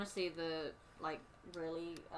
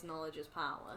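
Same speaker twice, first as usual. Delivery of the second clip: ordinary talk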